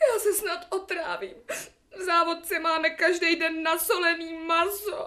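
crying while speaking. Speaking to a listener who says not to cry; crying. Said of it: "No tak neplačte".

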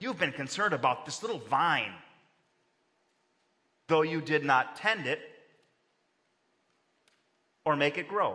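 dismissive, belittling, lofty godlike voice. Reading God's reply to the prophet: belittling God's voice about the little vine. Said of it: "I can see the intonation".

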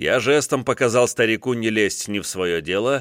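plain reading voice

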